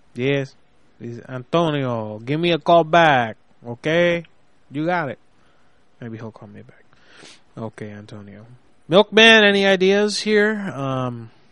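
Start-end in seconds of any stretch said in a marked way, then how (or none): 0.2-5.2 dumbed-down, put-on Mexican accent. Leaving a prank voicemail for a guy, in a stupid mexican voice. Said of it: "I'm gonna call him with a stupid Mexican voice".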